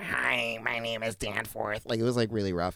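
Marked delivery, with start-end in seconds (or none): 0.0-1.8 soft, slow, awkward, nerdy schoolboy voice. Imitate a boy everyone made fun of introducing himself, in Danforth's awkward, nerdy voice. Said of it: "he just had such an awkward, like, nerdy voice".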